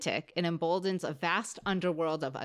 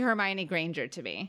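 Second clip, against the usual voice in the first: normal talking voice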